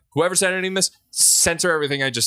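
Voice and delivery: high, loud, embarrassed yelling outburst.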